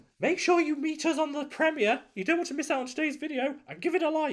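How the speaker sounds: daft, silly puppy voice, very high-pitched. Voicing the dog for the video outro to viewers; silly voice for Lon the dog. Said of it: "that's his stupid dog voice".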